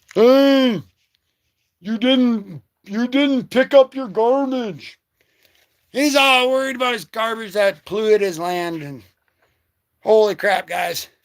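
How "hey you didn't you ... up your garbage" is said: orc voice, slow, mild drawn-out shout. Speaker retells a character yelling at another, imitating an orc yelling. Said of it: "he's yelling at him in like his orc voice".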